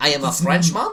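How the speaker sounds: poor, fake put-on French accent. Mocking a man who wants games more cinematic, in a put-on French accent. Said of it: "I am the best at impressions".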